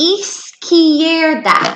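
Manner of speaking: izquierda said very slowly, drawn out, carefully modeled.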